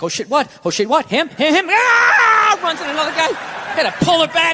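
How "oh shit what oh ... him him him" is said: put-on dog voice with swooping, jumpy pitch. Acting out the dog reacting to a nervous owner: voicing the dog's thoughts. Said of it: "Dog just looks at me like".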